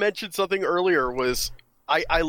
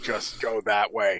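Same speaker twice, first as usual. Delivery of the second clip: very slow, mechanical robot speech; 7 semitones lower, 3 dB quieter than usual. Retelling how a character tries to fake a voice: imitating a robotic voice. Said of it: "he's just trying to use a robotic voice".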